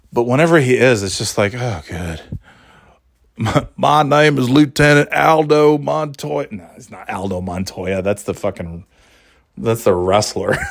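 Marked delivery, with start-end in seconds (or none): 1.5-6.4 put-on slow, stretched-out, dumb-sounding Southern accent. Imitating how a movie role sounds: dumb Southern accent as Brad Pitt. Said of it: "Brad Pitt just sounds like such an".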